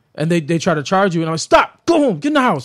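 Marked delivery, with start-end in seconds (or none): 1.4-2.7 mock, very high, short barked commanding authority-voice yells. Retelling commanding a charging dog home: reenacting an authority voice. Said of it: "your authority voice".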